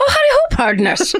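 terrible put-on Irish accent, very high pitch. Redoing a greeting from an email, in a bad irish accent. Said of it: "In an Irish accent, though".

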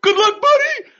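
high, loud manic grinning voice. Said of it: "and he's like".

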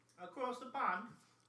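high, put-on Boston accent. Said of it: "a Boston accent?".

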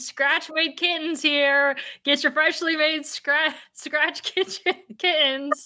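high, slow, words broken up by laughter. Trying to say an ad line aloud: laughing while talking. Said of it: "I'm laughing so hard".

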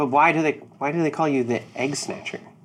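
nagging, pushy, badgering, repeated pestering. Voicing Dinar pestering another character while walking back: badgering. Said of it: "badgering you".

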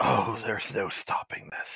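deep rattling undead voice. Voicing the Dreadlord, King of the Undead, as the heroes ask how to stop it: deep rattling voice. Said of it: "you hear a deep rattling voice".

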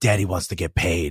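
pretend whisper. Acting out a coach's contract negotiation: imitating a whisper. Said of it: "I'm whispering in my dude's ear".

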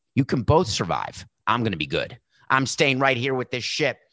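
ordinary talk, nothing marked

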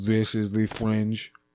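put-on robotic voice. Asked to say the show tag again, doing it in a robot voice. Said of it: "that was a good robot Fringe".

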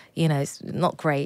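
ordinary talk, nothing marked

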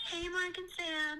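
fake, very high-pitched, very slow voice. Greeting the podcast hosts over the phone: fake high-pitched voice. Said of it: "We could tell the high-pitched voice".

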